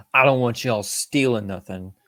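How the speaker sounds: ordinary talk, nothing marked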